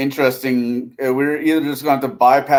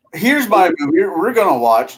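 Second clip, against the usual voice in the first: put-on sarcastic delivery, high and sing-song; 5 semitones higher than usual. Joking along with another speaker about picking a movie: put-on sarcastic tone. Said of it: "I'm being sarcastic".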